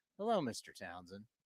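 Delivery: coldly polite, very low, hushed and disdainful. Speaker imitating an elevator guy greeting him by name, mock-disdainful. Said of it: "You can just hear the disdain in his voice".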